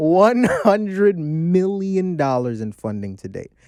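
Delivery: very slow, deliberate, drawn out word by word. Repeating a hundred-million funding figure for emphasis, said slowly. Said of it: "I'm gonna say it slow".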